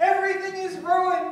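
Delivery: loud, high-pitched yelling. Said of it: "the director yell".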